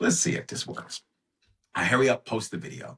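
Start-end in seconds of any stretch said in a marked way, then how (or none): 0.0-1.0 speaking low. Speaker retells filming a quick video while lining up for a plane, talking low. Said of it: "So I'm talking low".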